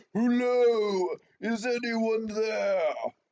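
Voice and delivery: very high, full-throated bellow with "hello" stretched. A half orc calls out so others know the group is there: bellowing at the top of his lungs. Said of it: "bellows at the top of his lungs".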